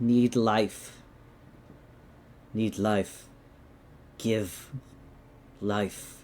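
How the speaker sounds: low, garbled, mangled, growling cave voice. Voicing a cave elemental answering in Primordial: garbled growling voice. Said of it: "garbled, growling, like, um, communication".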